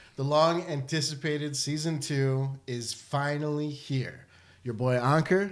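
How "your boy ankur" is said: put-on Americanized accent. Host opening season two by introducing himself, in an American accent. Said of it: "I say my name in such an American accent".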